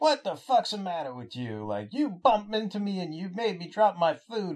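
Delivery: angry, mouthing-off voice. Retelling a comic scene where a prisoner mouths off: imitating a prisoner mouthing off. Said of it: "realizes who he's mouthing off to".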